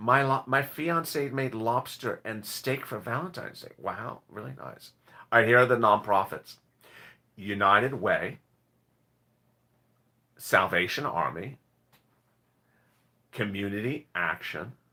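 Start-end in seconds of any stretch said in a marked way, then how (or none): 7.3-14.7 very slow, drawn-out, deliberate delivery. Reading out a list of nonprofits, very slowly. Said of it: "I'll go very slowly".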